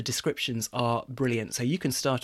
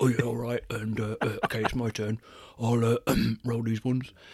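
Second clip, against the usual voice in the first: put-on Birmingham accent, troll voice. Imagining a troll waiting mid-fight for a dice roll, the speaker voices the troll, Birmingham-sounding. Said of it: "is he from Birmingham?".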